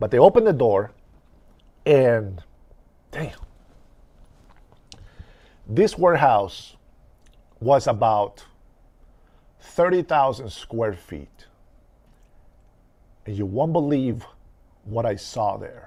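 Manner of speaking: fighting back emotion, holding back tears. Retelling how a warehouse door opened, fighting back emotion. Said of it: "I'm trying not to get emotional".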